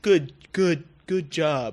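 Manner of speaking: slow, stilted, stiff, awkward, drawn-out bad acting. Retelling a game conversation, the speaker mimics Preston's reply: bad Preston voice acting. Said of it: "in his fucking horrible voice acting bullshit".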